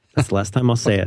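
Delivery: normal talking voice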